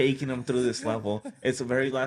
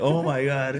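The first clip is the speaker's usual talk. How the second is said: put-on, mock-frustrated exclamation; 3 dB louder than usual. Retelling his brother's reaction when they couldn't do it, imitating his brother's frustration. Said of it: "the frustration in my brother's voice".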